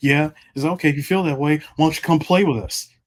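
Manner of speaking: mock condescending tone. Retelling what a cousin said: imitating a condescending tone. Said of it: "in the most condescending way possible".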